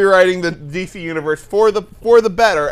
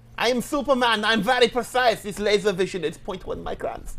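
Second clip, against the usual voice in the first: put-on German accent, quieter; 3 semitones higher, 9 dB quieter than usual. Showing how it sounds doing the German voice all the time: German accent Superman. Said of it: "if I have to do German".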